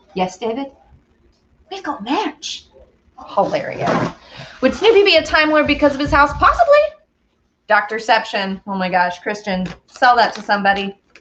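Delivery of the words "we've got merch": hushed, pitched-up, attempted Scottish accent. Mimicking David Tennant's podcast merch plug, in a David Tennant Scottish accent. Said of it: "That's the only Scottish accent I will attempt to do".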